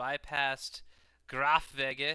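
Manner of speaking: put-on German accent. Player narrates Dave's moves in a war game, put-on German accent. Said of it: "I'm saying this with a German accent".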